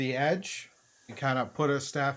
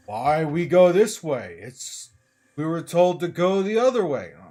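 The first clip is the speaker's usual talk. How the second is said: loud, gruff, bickering grumble; 2 semitones higher, 7 dB louder than usual. Describing two voices heard arguing over the way, voicing one: gruff, bassy voice. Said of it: "a pair of gruff, bassy voices arguing".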